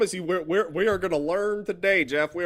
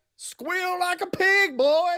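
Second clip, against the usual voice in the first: put-on mocking Southern accent, pitched very high; 12 semitones higher than usual. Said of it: "I'm making fun of our folk".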